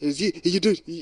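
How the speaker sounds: put-on Trinidadian accent. Recalling a woman who confronted them before a show, strong Trinidadian accent. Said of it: "she spoke with a very strong Trinidadian accent".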